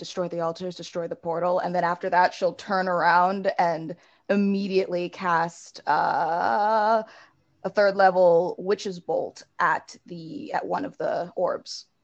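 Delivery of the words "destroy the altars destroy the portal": said quickly, in a hurry, rattled off. Voicing a character in a game just before a fight: said quickly. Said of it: "quickly say".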